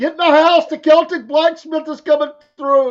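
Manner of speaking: put-on very high, shrill, loud hollering. Imagining neighbors hollering at the kids to get inside: imitating someone hollering. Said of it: "They're hollering at the kids".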